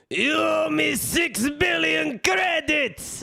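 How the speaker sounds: very high, slow, drawn-out shout. Reading out a chat message in the Watto voice. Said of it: "in the Watto voice".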